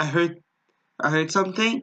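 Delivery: ordinary talk, nothing marked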